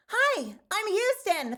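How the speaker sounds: very high, pitch way up chipmunk voice. Retelling a voice audition after being asked to go higher, in a chipmunk-like Houston voice. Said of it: "sound like a fucking chipmunk".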